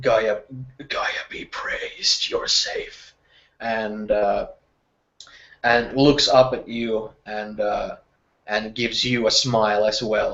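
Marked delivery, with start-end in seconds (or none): 0.9-3.1 barely-there, very quiet whisper, up close. Voicing a character greeting someone returned safe: very quiet whisper. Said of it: "he whispers in very, uh, quiet tone".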